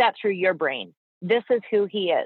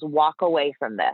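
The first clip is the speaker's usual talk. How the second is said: put-on stern voice, lower; 4 semitones lower than usual. Retelling the vet's reply when asked about fostering: imitating a stern vet. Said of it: "he looks at me so sternly, like a dad".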